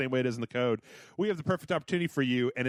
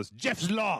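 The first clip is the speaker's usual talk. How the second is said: clumsy, poor, fake German accent; 3 semitones higher than usual. Explaining a new law in germany, saying its name in a bad german accent. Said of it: "that's not a good German accent".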